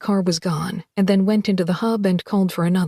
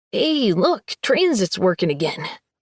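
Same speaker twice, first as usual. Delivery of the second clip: squeaky voice with a squeak in it. Reading a guard's line in a story aloud: squeaky voice. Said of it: "a squeaky voice said".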